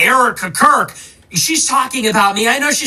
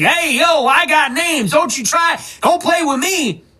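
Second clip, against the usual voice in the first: arrogant, snooty voice; 4 semitones higher than usual. Mocking a commentator's earlier boasts about having names: cocky Candace Owens impression. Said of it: "bobbing her head, cocky".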